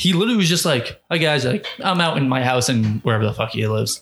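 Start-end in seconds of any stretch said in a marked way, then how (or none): 1.1-4.0 put-on nonchalant, casual-sounding voice. Imitating Carl Nassib's video announcement: imitating Carl Nassib, nonchalant. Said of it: "he was just so nonchalant about it".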